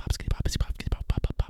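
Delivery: soft, breathy, voiceless ASMR-style whisper.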